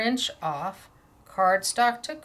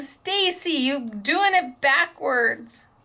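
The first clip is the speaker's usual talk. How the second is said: acted out slow, drawn-out hollering yell; 6 semitones higher than usual. Imagining a watching viewer, Claire, scolding the speaker: imitating Claire yelling. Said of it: "I bet she's yelling at me going".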